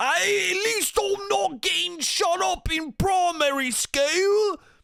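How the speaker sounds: very high, typical American put-on British accent. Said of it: "that's what it's gonna sound like".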